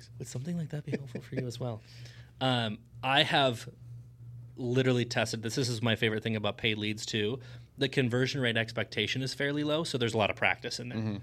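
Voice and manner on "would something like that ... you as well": soft, quick, sultry, seductive voice. Repeating the invite phrase when asked how it's said, sexy voice. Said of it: "Sexy voice".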